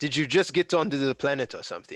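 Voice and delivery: quick, snarky delivery.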